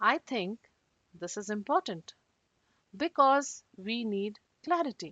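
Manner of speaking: slow, measured, halting delivery with clear pauses. Reading the same sentence again to show the difference, with some pauses. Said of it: "the same sentence with some pauses".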